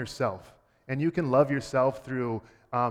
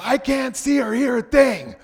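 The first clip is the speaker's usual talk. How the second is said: put-on very high, shrieking, drawn-out child wail; 11 semitones higher, 9 dB louder than usual. Describing a child in distance learning who can't work the iPad, imitating a child screaming. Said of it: "And he screams".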